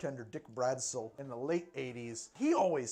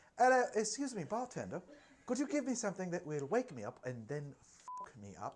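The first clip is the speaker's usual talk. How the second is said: posh accent with pitch lifted up; 5 semitones higher than usual. Redoing the impression of a model ordering a drink, posher: posh Kate Moss impression. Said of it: "Is she more posh?".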